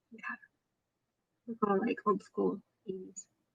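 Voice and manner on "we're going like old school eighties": whispered, much softer. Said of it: "Why are you whispering?".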